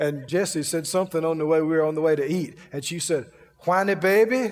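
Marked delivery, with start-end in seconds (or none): 3.6-4.5 put-on Louisiana Cajun accent. Retelling what a woman teased a man with on the way to eat, good Cajun accent. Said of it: "In a good Cajun accent".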